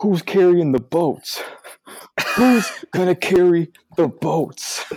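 mock, very high, unhinged, frantic all-out screaming. Act out the last 20 seconds of a struggling lift on the incline, imitating Goggins screaming. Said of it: "he just started screaming like".

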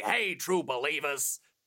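put-on heavy New York accent, hard R's. Showing how they do the catchphrase impression: Stan Lee, heavy New York accent. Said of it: "I think I go a little too New York".

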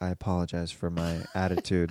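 put-on grave tone, soft, solemn and calm. Acting out how the other speaker may have apologized to the landlord: imitating a solemn, calm apology. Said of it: "very solemn and you're, like, very calm".

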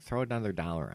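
plain

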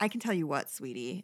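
acted-out, sweetly condescending, patronizing tone. Mimicking a woman who keeps calling her rival sweetie: imitating a condescending tone. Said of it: "that's so condescending".

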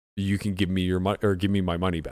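ordinary talk

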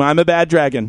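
ordinary talk, nothing marked

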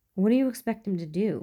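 sharp, snappish, snapping delivery. She snaps back at Mulder, defending Skinner, snapping. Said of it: "she snaps".

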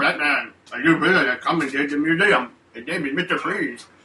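thick, muffled, cotton-mouthed delivery. Mocking the old butler's lines with a big cotton mouth sounding: cotton-mouthed Michael Gough impression. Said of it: "with his big cotton mouth sounding".

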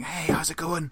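quiet, hushed tone. Retelling phoning D after his flight, the speaker answers as D in a hushed voice. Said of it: "he answered in a hushed voice".

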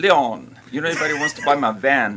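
put-on Australian accent, poorly done. Retelling Liz dangling the van keys at the shop, in a bad Australian accent. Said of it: "That's the worst I think I've ever heard".

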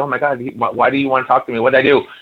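acted-out nervous stammering. Recalling being fifteen when he wanted to talk, retelling nervous stammering. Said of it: "I'm stammering because I was like".

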